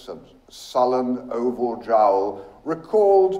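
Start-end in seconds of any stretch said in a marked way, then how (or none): none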